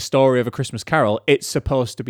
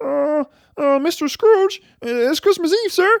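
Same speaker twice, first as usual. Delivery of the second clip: very high, put-on puppet frog voice. Recounting the scene in Scrooge's office opposite Michael Caine, do a decent Kermit impression. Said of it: "which I think's a decent Kermit impression".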